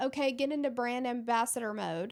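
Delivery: plain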